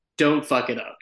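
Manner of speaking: ordinary delivery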